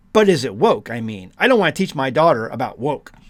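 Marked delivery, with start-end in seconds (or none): none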